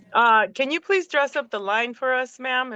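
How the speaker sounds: normal talking voice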